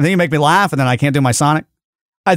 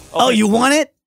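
higher, lifted cartoon animal character voice; 8 semitones higher than usual. Saying the line from the clip after announcing a Sonic impression: Sonic voice. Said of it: "And I'm gonna do Sonic".

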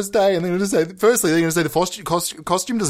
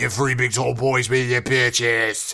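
bottomed-out, very low, deep voice; 7 semitones lower than usual. Showing off other voices, next the low one: low voice. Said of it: "I got the low".

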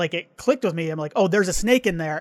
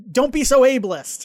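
screaming voices, pitched higher; 6 semitones higher, 4 dB louder than usual. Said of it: "they're screaming these things at each other".

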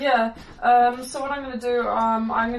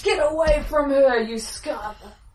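restrained, contained warrior's battle cry; 3 semitones higher than usual. In combat, Silver shouts at an enemy, Silver bellowing at top of lungs. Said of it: "will bellow at the top of his lungs".

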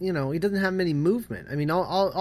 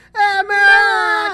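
shrill, piercing yell, very loud and very high; 13 semitones higher, 10 dB louder than usual. Acting out a character tipping backwards while calling a friend, imitating the character's cry. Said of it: "he tips backwards while going".

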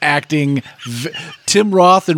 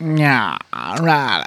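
cartoonish, over-the-top villain voice, quieter; 3 semitones lower, 4 dB quieter than usual. Describing how an actor talks in a film: Richard O'Brien impression. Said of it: "He talks like".

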